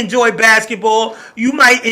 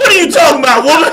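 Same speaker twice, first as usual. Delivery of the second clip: fast, high, playful fake yelling; 5 semitones higher, 3 dB louder than usual. Answering another speaker on the radio after being yelled at: mock yelling. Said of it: "I'm gonna yell at you right now".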